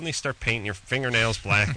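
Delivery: ordinary delivery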